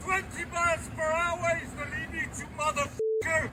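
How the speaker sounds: very angry, furious, browbeating tirade. A man in a recorded confrontation with a driver, very angry shouting. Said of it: "browbeat by a very angry Napoleon".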